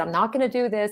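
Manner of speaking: ordinary talk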